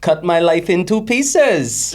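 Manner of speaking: put-on Welsh accent. Asked by the other speaker whether they can do welsh, the speaker tries a welsh accent. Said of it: "Can you do Welsh?".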